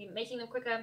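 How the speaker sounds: plain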